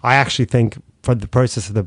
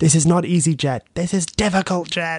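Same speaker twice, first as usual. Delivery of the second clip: put-on high-pitched scream at full volume; 7 semitones higher than usual. Retelling how mum reacted to flight staff at Heathrow: imitating her screaming. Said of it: "she just screamed at the top of her lungs".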